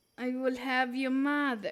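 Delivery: fake Russian accent, laid on. Speaker tries out accents for fun, attempting a put-on Russian accent. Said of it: "I can do Russian".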